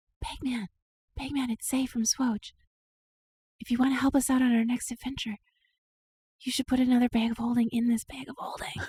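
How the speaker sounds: hushed whispering. A player whispers into the bag of holding, calling to Bagman, whispering. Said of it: "I whisper in".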